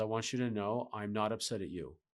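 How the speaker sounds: through clenched teeth. Recounting what they told her while angry, retelling through gritted teeth. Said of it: "I told her through gritted teeth".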